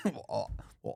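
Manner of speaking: bad, fake, put-on Scottish accent. Trying out a scottish accent for a host, then asking if it came close, in a bad scottish accent. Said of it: "Was that pretty close?".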